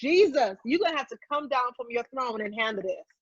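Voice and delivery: angry, exasperated outburst. Retelling being mad at God: imitating her own angry yelling. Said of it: "I was yelling like".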